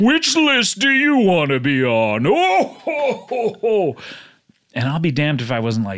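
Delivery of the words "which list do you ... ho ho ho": put-on jolly old fat man voice, higher. Retelling how Santa Claus caught him sneaking downstairs: imitating Santa Claus. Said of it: "And he goes".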